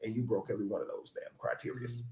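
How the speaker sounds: really calm, soft, quiet voice. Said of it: "I'm just gonna get real calm".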